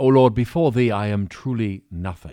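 put-on upper-crust British accent. Telling a joke, voicing a gentleman praying at the altar, upper-crust British accent. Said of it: "upper crust British gentleman enters".

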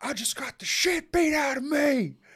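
mock very high, loud screamed-out cry. Retelling how a drunk man on his phone screamed: imitating someone screaming. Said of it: "he just screams out".

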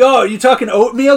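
loud, high-pitched, eager blurt.

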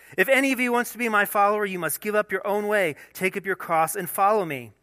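openly sarcastic delivery. Reading a Bible passage, the speaker imagines Jesus addressing his disciples, acting out Jesus sarcastically. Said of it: "I can just imagine he said this in a sarcastic way".

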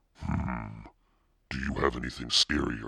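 ordinary delivery, nothing marked

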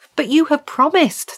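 stammering. Sanju and Bracken to the small man who won't kill the stag, stammering. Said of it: "they stammered".

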